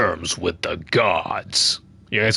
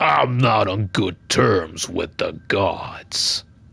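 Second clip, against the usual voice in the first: very slow, weighty voice, every word drawn out. Imitating the younger game character's voice while playing: younger Kratos voice. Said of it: "the one that I was trying to imitate".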